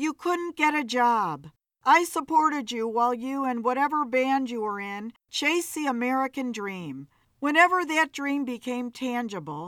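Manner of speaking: plain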